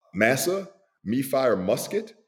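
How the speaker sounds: slow, high, thick heavy dialect. Recalling a movie scene, quoting a soldier to his commander in a heavy dialect. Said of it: "he says in this really heavy dialect".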